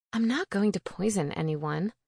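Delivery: plain reading voice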